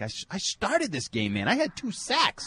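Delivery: high-pitched, whiny complaining voice. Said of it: "He's like".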